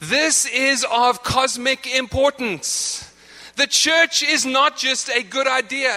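impassioned, deeply committed, fervent preaching delivery. Preaching to a congregation about the church: raised voice, passionate. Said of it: "I know I'm raising my voice".

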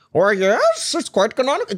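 high, swooping put-on voice. Answering a joke remark with a quick Jordan Peterson voice. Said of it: "That Jordan Peterson voice".

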